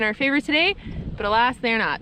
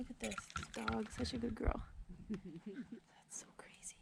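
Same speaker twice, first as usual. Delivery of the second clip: whispered, very quiet, barely there; 23 dB quieter than usual. Watching an animal underwater with others, the speaker talks to the dog: whispering. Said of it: "I don't know why I'm whispering".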